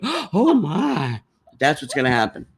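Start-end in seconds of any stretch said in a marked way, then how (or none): 0.0-1.2 put-on elderly Southern lady voice, very high. Describing a picture, voicing the old southern lady in it, in her voice. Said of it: "a picture that old Southern lady going".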